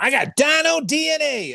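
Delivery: very high, slow, squeaky character voice. Recalling fans at a convention asking for the character, Hasselberry voice. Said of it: "when I was doing like a higher pitched character".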